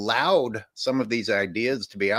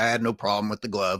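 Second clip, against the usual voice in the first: dismissive, scornful scoff. Retelling Jordan's reply about a defender: imitating Jordan scoffing. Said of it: "he kinda scoffed".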